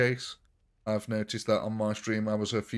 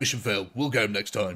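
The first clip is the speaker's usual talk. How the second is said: put-on British accent of a commando soldier. Playing a game, the speaker retries the mission-failed line as a Captain Price accent, second try. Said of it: "Try that one again".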